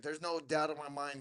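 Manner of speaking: play-acted grave, dead-serious, certain tone. Retelling Malik's reply to a threat to fight: imitating Malik getting real serious. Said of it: "he gets real serious".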